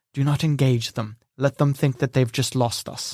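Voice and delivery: hushed, quiet whispered voice. Narrating a role-play, a character whispers a warning to the player. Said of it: "He whispers to you".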